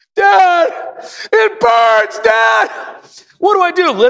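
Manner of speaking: tearful, very high, drawn-out pleading sob. Retelling a son after eating too much hot sauce: imitating a son crying. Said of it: "here comes the tears".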